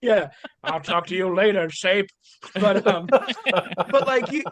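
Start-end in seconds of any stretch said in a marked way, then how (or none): 0.6-2.1 put-on old-time 1930s gangster voice. Joking in conversation, saying goodbye to someone: 1930s gangster voice. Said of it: "did that in thirties gangster voice".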